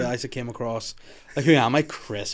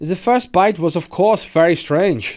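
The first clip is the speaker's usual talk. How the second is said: put-on German accent, pitched up, raised and louder; 5 semitones higher, 6 dB louder than usual. Quoting what Armin Meiwes said, as asked: German voice as Armin Meiwes. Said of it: "do you want me to do it in German voice".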